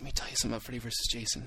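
put-on whisper. Retelling meeting an actor as a kid: imitating Kane Hodder whispering. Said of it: "He was whispering to me".

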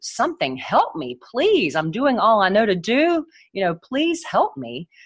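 play-acted, high, pleading cry, please after please. Recounting a frightening moment, retelling how they cried out for help. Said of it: "I just cried out like".

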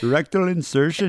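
bad put-on Indian accent. Joking with a friend about sneaking in nunchucks, use a bad put-on indian accent. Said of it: "I don't know why I'm doing that voice".

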